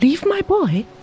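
exclaiming, voice jumping way up, high-pitched. Told to leave his boy with the officers, the man exclaims. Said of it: "exclaimed Hom Hing".

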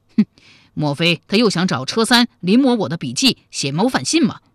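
ordinary delivery

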